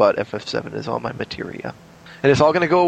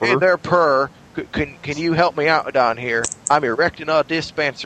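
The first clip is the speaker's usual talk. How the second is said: put-on Southern accent. Acting out what players on the server say, in a stereotypical southern accent. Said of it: "Why do you play with stereotypical Southern accents?".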